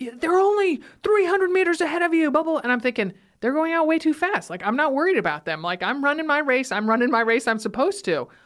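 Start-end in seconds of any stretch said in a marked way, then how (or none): 0.0-2.6 mock-yelling, much higher pitch. Retelling how Jack yelled at her during a race, imitating Jack yelling. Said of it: "he's yelling at me like".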